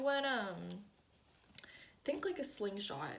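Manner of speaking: voice breaks and catches mid-phrase. Explaining an idea to the audience when the voice cracks mid-sentence. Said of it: "my voice totally cracked there".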